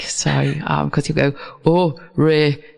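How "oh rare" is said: badly done, rough put-on Northern English accent. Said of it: "I can't really do his Northern English accent".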